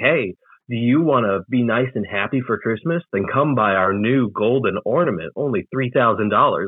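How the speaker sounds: normal talking voice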